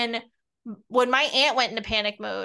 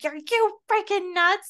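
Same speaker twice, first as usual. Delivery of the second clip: high, frightened, fear-driven scream; 9 semitones higher than usual. Recalling when she hid and couldn't be found, speaker is retelling own screaming. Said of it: "That's when I go into like screamer mode".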